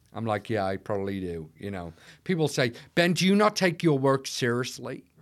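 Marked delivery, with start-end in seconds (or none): 2.9-4.9 put-on American accent. Quoting people who ask about his jokes: fake american accent. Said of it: "I'm doing a fake American accent".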